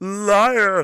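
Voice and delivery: very loud, high, drawn-out cry. Reading out a viewer's super chat on a stream, Anakin voice. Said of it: "in the Anakin voice".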